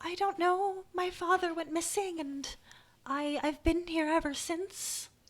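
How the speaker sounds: little gnome character voice. A player voices a gnome answering another character's question, gnome voice. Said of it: "I have to do a gnome voice".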